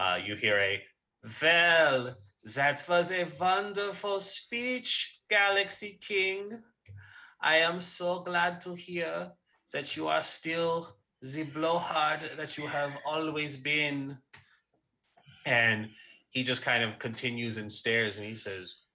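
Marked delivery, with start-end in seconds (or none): 1.4-14.2 put-on high-pitched Eastern European accent. Voicing a character answering the Galaxy King's speech; Eastern European Bavarian accent. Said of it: "in a Eastern European kind of Bavarian accent".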